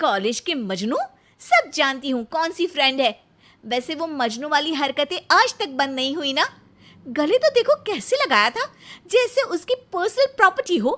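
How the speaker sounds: speaking in anger. A wife scolds her husband after his college friend hugged him, angry. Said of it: "इस पर [name] किलसते हुए kitchen में चली जाती है, / यार, पत्नी हो मेरी".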